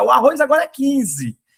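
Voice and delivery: high, bellowed, shouted announcer-style call. Retelling a supermarket clerk with a microphone announcing new prices: imitating a shouting store clerk. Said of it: "ele já começava a gritar".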